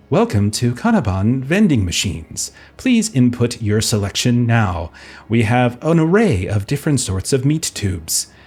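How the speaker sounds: automated, corporate-sounding vending machine announcement voice. Voicing a vending machine that suddenly speaks up: corporate vending machine voice. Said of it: "a corporate vending machine".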